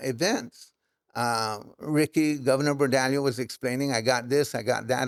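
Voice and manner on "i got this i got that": normal talking voice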